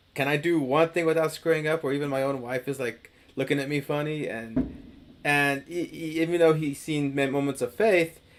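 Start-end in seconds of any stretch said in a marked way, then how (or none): none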